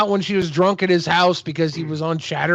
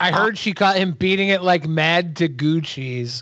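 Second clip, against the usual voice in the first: ordinary talk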